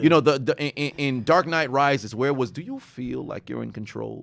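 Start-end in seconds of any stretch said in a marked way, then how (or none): 2.5-4.2 low, soft villain voice. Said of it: "I always think of, like, the Bane".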